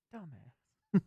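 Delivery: hushed half-whisper, very quiet, barely audible. Repeating a remark after saying it should have been half-whispered: half-whispered. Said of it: "I was supposed to whisper that".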